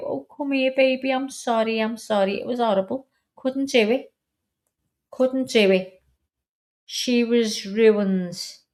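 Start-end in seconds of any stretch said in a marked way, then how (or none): 0.0-2.4 heartbroken, mock-sorry, coaxing tone. Retelling making up to the dog after shouting at her: imitating own heartbroken apology. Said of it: "broke my heart and I'd go".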